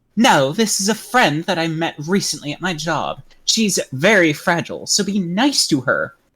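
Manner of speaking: put-on entitled woman's voice. In a skit, a mom introduces a friend from her job to her son, Karen voice. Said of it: "the Karen voice is really hard".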